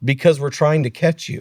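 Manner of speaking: put-on deadpan, flat delivery. Retelling how a cop answered an arrested man: imitating a deadpan reply. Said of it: "the cop literally deadpans and looks at him and goes".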